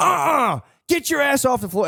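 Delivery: stern, scolding tone.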